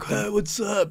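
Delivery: airheaded bro voice. Mocking how a game's male character sounds: imitating a stupid dude voice. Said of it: "But he sounded stupid".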